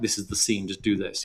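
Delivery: ordinary talk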